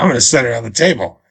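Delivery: gruff put-on voice. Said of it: "Why does he sound like Nick Nolte?".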